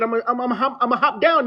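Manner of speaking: put-on upper Midwest accent. Repeating the other speaker's words to show their accent: imitating a Minnesota accent. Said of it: "I can hear it when you said".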